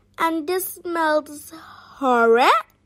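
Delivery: ordinary delivery, nothing marked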